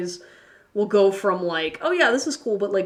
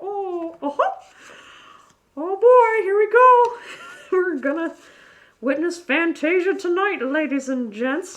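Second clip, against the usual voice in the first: very high, squeaky cartoon mouse voice; 9 semitones higher than usual. Hosting a card reading for an audience, slipping into a Mickey Mouse voice. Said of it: "I even got my Mickey Mouse voice going".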